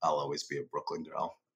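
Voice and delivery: put-on dead-serious, completely flat, deadpan delivery with no reaction. Retelling his daughter's reply to someone after moving: imitating a deadpan reply. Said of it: "she looked at them completely deadpan and goes".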